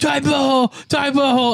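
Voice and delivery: very high, repeated hollering. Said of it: "someone was just yelling at me".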